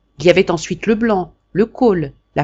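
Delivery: plain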